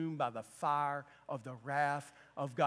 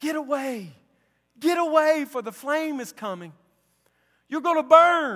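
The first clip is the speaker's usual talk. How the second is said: shrill, full-throated, very loud, high-pitched holler; 12 semitones higher, 15 dB louder than usual. Telling a story, the speaker acts out a man warning a pheasant, retelling someone hollering. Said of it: "he was hollering at the pheasant".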